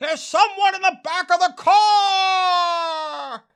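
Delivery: very high-pitched, very slow, drawn-out scream. Recounting a film's plot, the speaker acts out a man imitating a scream. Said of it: "and he screams".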